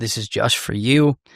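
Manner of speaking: ordinary delivery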